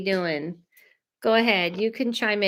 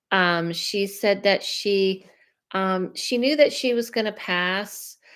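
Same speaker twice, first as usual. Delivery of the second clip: normal talking voice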